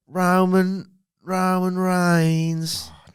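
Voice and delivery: put-on Australian accent. Chatting with a co-speaker, pronouncing a name: Australian accent. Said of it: "Roman Reigns in an Australian accent".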